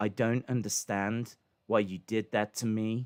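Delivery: put-on flat monotone. Critiquing a wrestler's first delivery of a line, doing a Finn Balor monotone impression. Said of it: "the first delivery where he's so monotone".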